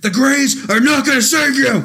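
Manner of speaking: high, loud, put-on mock scream. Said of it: "just start screaming like Alex Jones".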